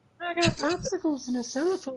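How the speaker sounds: squeaky, very high, sleazy, creepy voice. Trading voices with the others, speaker attempts a pervert voice. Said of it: "but I can do the voice".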